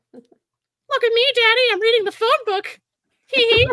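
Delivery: very high-pitched gingerbread man character voice. Reading the phone book as asked, in the gingerbread voice. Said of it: "In the gingerbread voice".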